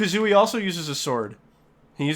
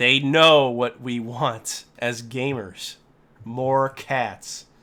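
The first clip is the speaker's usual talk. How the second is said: slow, put-on, mock-sarcastic drawl; 4 semitones lower than usual. Talking about collecting cats in a game: sarcastic-sounding put-on tone. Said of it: "I'm not trying to sound sarcastic. I'm just speaking this way".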